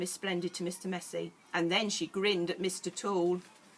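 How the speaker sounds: plain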